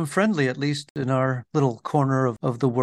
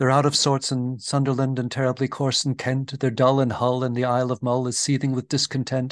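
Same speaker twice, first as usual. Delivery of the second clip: plain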